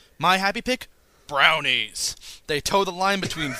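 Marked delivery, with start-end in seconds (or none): 1.3-2.2 'brownies' said with odd anger. Reading a listener's happy pick aloud, with an angry 'brownies'. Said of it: "oddly angry".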